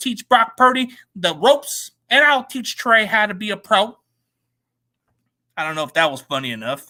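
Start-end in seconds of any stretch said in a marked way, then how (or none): 0.0-4.0 slow, fake, put-on Arkansas accent. Joking about quarterbacks teaching each other, in a put-on Arkansas accent. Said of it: "an Arkansas version".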